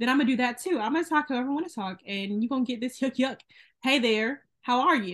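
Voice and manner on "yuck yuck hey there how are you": fake hillbilly accent from the South. Speaker from the south showing how they talk with their accent on: put-on hillbilly accent. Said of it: "put my hillbilly accent on".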